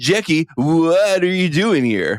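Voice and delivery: high, slow California accent.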